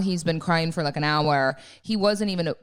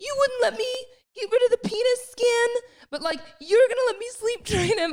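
mock shrill, very high, upset, complaining tone. Retelling a complaint to Fran at night, imitating being upset. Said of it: "I was so upset".

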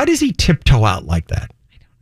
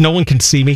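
plain

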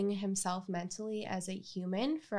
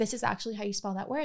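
ordinary talk

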